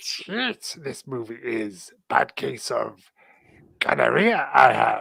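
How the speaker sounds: wise little alien sage voice. Joking while watching a movie with others, in a Yoda voice. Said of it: "in the style of Yoda".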